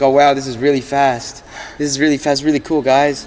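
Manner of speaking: mock lifeless deadpan enthusiasm, dead flat monotone. Mimicking a TikTok guy who paid ten grand, imitating a dead, flat voice. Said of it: "sound how dead in his voice is like".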